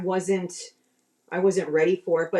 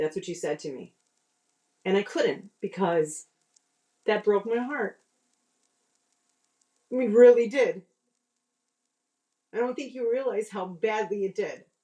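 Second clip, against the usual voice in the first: tearful voice, on the verge of tears; 2 semitones higher than usual. Telling a former partner how their answer broke the speaker's heart: almost crying. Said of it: "because you're almost crying".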